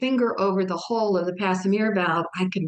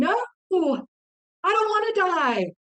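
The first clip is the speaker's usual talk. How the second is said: mock very high, drawn-out yell; 11 semitones higher than usual. Retelling hearing a nurse while in a coma: reenacting her own yell. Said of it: "And I'm yelling".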